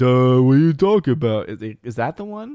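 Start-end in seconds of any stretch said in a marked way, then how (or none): 0.0-1.5 loud, dopey idiot voice. Trying out the idiot voice a viewer asked about: put-on idiot voice. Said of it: "think about the idiot voice".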